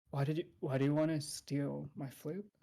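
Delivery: hushed whisper under the breath. Voicing a character in a game scene so no one else hears, whispering under his breath. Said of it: "whisper under his breath so that no one hears".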